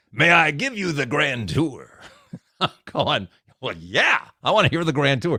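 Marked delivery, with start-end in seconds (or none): 0.2-1.9 rough, gravel-edged, gravelly man's voice. Speaker retelling a guy speaking from behind the counter, imitating a gravelly-voiced guy. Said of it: "I hear this gravelly voice guy".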